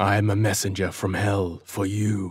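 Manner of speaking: deep, hollow, tomb-like sepulchral voice. Narrator reads a cloaked figure's words to a sentry, sepulchral voice.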